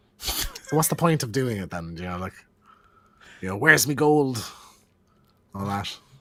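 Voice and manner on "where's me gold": loud fake Irish accent, leprechaun-style voice. Imitating a leprechaun from a horror film: put-on irish accent. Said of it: "Why did you try and do an Irish accent then".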